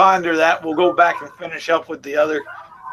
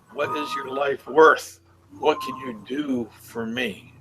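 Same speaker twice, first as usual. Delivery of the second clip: quieter, dark, indistinct, hard-to-understand voice; 3 semitones lower, 6 dB quieter than usual. Game master voicing a faint voice heard in a player's head, dark and hard to understand. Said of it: "A voice that's dark, hard to understand".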